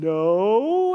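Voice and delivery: put-on sheepish, drawn-out no. Retelling someone's answer to a rude question: imitating a sheepish reply. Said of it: "kinda sheepishly was like".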